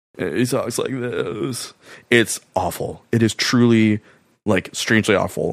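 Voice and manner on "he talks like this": heavy affected vocal fry. Describing a film actor's voice, then imitating Ashton Kutcher's vocal fry. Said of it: "affecting male fry vocal".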